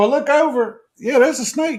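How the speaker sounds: usual speaking voice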